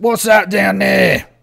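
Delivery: very loud, raspy, rough orc creature voice. Voicing the orc who hands over a drink: orc voice. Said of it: "the orc looks at you and goes".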